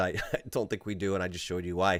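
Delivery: put-on condescending, patronizing, dismissive voice. Retelling how an analyst answered a question: imitating a condescending reply. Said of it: "very condescendingly said".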